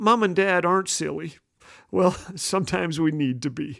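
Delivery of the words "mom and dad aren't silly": normal talking voice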